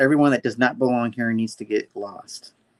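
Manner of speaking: plain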